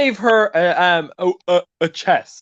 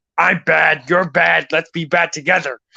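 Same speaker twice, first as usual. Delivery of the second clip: cartoon snake character voice; 3 semitones lower than usual. Showing off impressions from a film, doing a Mister Snake voice. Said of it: "I can also do mister Snake".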